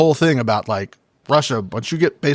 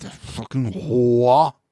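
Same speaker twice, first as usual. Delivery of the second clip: mock muttering under the breath. Acting out what a woman said at a work event: imitating muttering under her breath. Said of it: "Under her breath".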